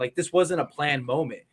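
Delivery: plain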